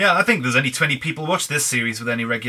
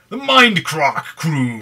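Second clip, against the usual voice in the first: slow, loud, grand announcer call like a ringmaster. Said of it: "The, the Mindcrack crew".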